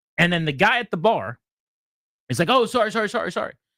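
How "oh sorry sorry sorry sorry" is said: put-on high, eager, repeated, profuse apologetic delivery. Retelling how the guy at the bar answered: imitating someone apologizing profusely. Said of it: "this guy's very apologetic".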